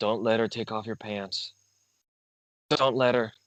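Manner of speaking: whispered aside. Warning a companion in character not to let her: whispering. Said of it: "I whisper to you".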